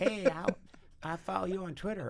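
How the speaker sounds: high, easy, distinctive drawling voice. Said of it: "in that distinctive drawl".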